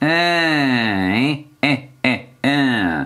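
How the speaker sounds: slow witch voice, each hein stretched long. Demonstrating a vocal exercise to a student, in a witch voice. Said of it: "Sorcière".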